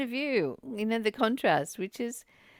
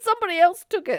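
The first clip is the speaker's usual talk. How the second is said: talking through laughter, higher pitch and louder; 7 semitones higher, 7 dB louder than usual. Recounting something never acknowledged in the hospital, laughing while talking. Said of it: "so sorry for laughing".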